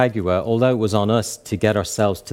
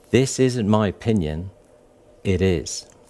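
clear, mock-authoritative tone, slower. Recalling what a woman told the restaurant manager about the wine, retelling a clear, authoritative voice. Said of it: "in a very clear and authoritative voice".

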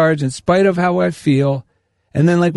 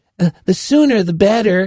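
put-on nervous little voice, scared and hesitant; 3 semitones higher than usual. Retelling making an appointment, voicing an inner thought: imitating a scared inner voice. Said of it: "that scared voice that goes".

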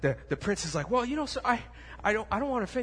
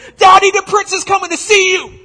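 shrill, very high, very loud yell; 10 semitones higher, 18 dB louder than usual. Telling a story, voicing a daughter calling to her father from her room: yelling from her room. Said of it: "she yells from her room".

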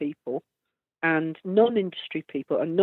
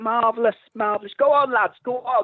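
put-on enthusiastic, gushing, cheering tone; 4 semitones higher than usual. Retelling how a man cheered the band at a gig, imitating his cheering. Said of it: "like this".

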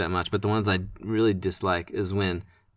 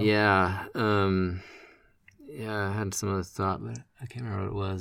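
ordinary talk, nothing marked

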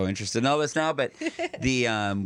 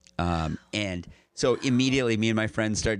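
usual speaking voice

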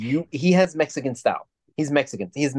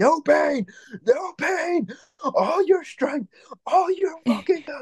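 screaming shout, higher; 13 semitones higher than usual. Retelling a cornerman screaming at a boxer: imitating a cornerman screaming. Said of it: "listening to him just screaming out".

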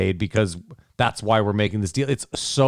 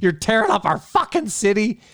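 mock shrill yell, very high, voice cracking; 13 semitones higher than usual. Describing a man yelling from his stoop, imitating a yell, voice cracking. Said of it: "His voice cracks, like, six times".

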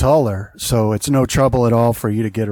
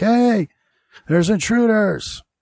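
very high, shrill, alarmed screaming; 11 semitones higher than usual. Voicing a guard who runs up waving a sword: screaming guard. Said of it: "he's screaming too. He's like".

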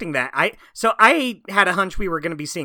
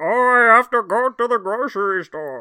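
slow, pathetic, pitiful put-on voice; 4 semitones higher than usual. Describing a show's pathetic version of Bane, doing a pathetic Bane voice. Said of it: "Bane talks like this".

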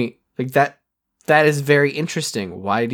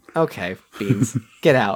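ordinary talk, nothing marked

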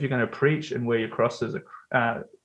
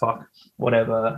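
plain

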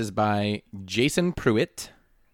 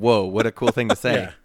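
normal talking voice

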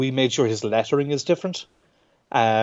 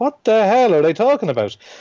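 high, loud, baffled outburst. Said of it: "and you're like".

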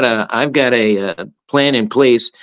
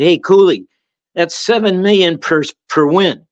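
higher-pitched, taunting, heckling call-out; 4 semitones higher than usual. Retelling a student heckling a coach at a game: imitating someone yelling. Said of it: "He yells out".

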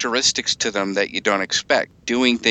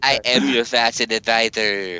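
flamboyant lisp in a deep bass voice. Hosts riffing on a lisping bass character, speaking as fabulous Darth Vader. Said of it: "so it's a fabulous Darth Vader".

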